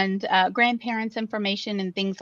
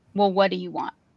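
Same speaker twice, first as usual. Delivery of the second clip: play-acted icy cold voice, all warmth gone. Retelling what a little old man suddenly asked the speaker, imitating a cold tone. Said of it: "it was a very, you know, cold".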